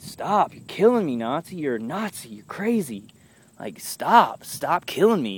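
put-on mild yell. Retelling banging on the wall at the guy: imitating own past yelling. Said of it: "I was yelling at the top of my lungs".

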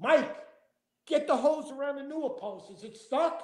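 mock high yell, shouted as if calling downward. Retelling calling down to mike about the stuck hose, retelling a yell down. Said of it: "I yelled down".

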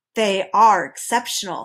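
ordinary delivery

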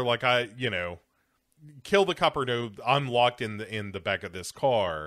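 ordinary talk, nothing marked

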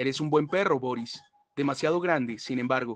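ordinary delivery, nothing marked

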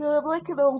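talking through a yawn. Trying to recall what they meant to do, yawning while talking. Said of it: "sorry, yawning".

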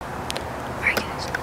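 soft, toneless whisper.

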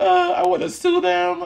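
imitated tearful crying. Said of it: "on the phone crying".

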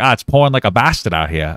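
strange, weird, put-on Boston accent. Retelling a coworker's first words on a rainy shift: imitating a weird boston accent. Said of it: "the weirdest Boston accent".

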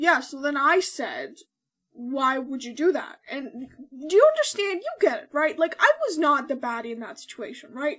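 loud rambling talk with a full mouth. Recapping a scene where Reed talks to Silver, imitating Reed talking with her mouth full. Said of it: "with her mouth full, she's just going like".

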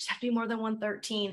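whispering under breath. Retelling a coach whispering the needed score while cameras are on: whispering under her breath. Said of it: "She's like whispering it under her breath".

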